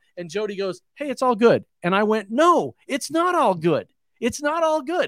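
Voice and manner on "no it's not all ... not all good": mock mad, pitched-up, insistent, repeated words. Retelling his reply to the car's owner after running over the car, retelling getting mad. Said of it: "I actually got mad at him".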